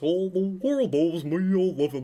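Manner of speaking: silly, goofy cartoon dog voice. A fan recalls the original guy's voice and quotes it in a Goofy voice. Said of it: "I like his goofy voice".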